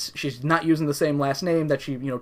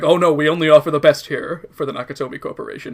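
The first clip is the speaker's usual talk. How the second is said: play-acted, loud, tongue-in-cheek, facetious sarcasm; 7 dB louder than usual. Retelling a movie character's reply about the limo: imitating a facetious remark. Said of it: "he was being facetious when he's just like".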